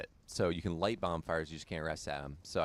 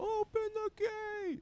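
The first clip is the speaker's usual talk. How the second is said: acted, very high, echoing crowd yell. Acting out everyone on the drawbridge yelling after the guy, imitating a crowd yelling. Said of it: "everyone else who yells after".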